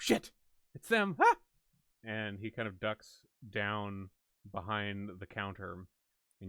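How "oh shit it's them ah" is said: very high, shrill, very loud sudden outburst. Voicing a character who sees the group approaching his tent: exclaiming. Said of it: "you hear him exclaim".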